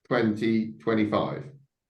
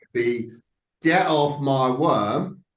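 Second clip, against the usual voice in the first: loud, slow, drawn-out shout; 4 semitones higher, 6 dB louder than usual. A player, in character on the worm, shouting at the enemies. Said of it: "and I'm going to shout at them".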